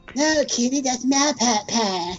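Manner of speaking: put-on cartoon child voice. Joking about a wrestling commentator's voice: Cartman voice. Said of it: "you do that too well, man".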